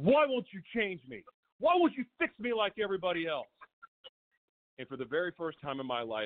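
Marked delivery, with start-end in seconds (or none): 0.0-3.5 mock furious, high, swooping angry scream. Retelling getting pissed off and yelling at god: retelling an angry scream at god. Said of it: "I started screaming at God".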